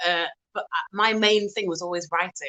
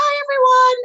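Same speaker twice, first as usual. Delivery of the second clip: put-on very high, loud, squeaky child's voice; 10 dB louder than usual. Retelling how the voice sounded right after surgery: imitating a high childlike voice. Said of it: "And it sounded like a child".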